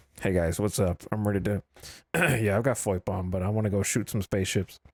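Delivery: low, unexpressive mumble with no expression. Demonstrating in-game voice chat, showing how it sounds without expression: unexpressive delivery. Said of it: "what if I wasn't like expressing myself".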